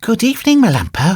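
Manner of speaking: sweet, honeyed voice. A weasel at the doghouse door greets the dog inside, in a sweet voice. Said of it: "said in a sweet voice".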